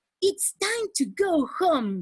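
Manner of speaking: cheerful happy voice. Speaker demonstrating one sentence said with different emotions: happy voice. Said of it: "If I'm happy".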